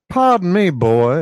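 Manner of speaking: loud, high, put-on southern backwoods accent. A character politely addresses a boy; southern backwoods accent. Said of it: "excuse my southern backwoods patois".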